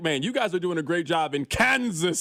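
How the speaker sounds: gushing, bright, exclamatory, excited enthusiasm. Quoting how he kept saying it: mock-excited exclamation. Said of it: "it's like he said it with an exclamation point".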